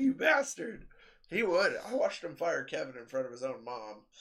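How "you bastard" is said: mock furious, very high-pitched, angry. Retelling a phone call with a man who wouldn't give a discount: retelling an angry insult. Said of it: "I'm so pissed off".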